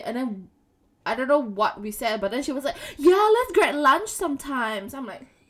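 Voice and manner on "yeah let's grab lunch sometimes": put-on American accent with raised pitch. Retelling how a friend introduced herself: imitating Michelle in American accent. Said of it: "where's the American accent come from?".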